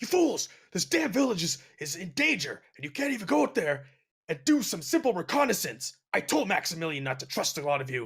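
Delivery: increasingly worked-up, agitated outburst. Narrating a scene, voicing Andre as he scolds the others, visibly agitated Andre. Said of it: "is starting to get like visibly agitated".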